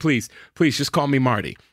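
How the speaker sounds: acted, mock-embarrassed pleading tone. Retelling how a man reacted to being gushed over, acting out an embarrassed plea. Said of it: "he's like getting embarrassed by it".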